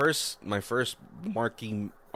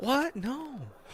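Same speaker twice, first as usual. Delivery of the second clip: very high, pitched-up delivery. Introducing The Happening, deliver one of its lines as a Mark Wahlberg impression. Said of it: "you might not be able to do any other Wahlberg lines, but that one you got down pretty well".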